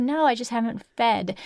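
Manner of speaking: ordinary talk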